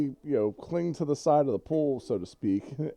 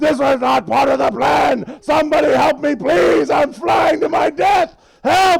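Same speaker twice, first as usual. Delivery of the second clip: frantic, shrill, very loud, raw panicked screaming; 13 semitones higher, 13 dB louder than usual. Narrating someone levitating higher into the sky, voicing him: screaming.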